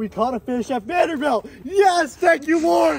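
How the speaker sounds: excited, thrilled tone. After catching a fish at Vanderbilt, speaking to the viewers, excited. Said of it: "you guys don't know how excited I am".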